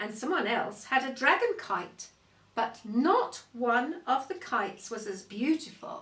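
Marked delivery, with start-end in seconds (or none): none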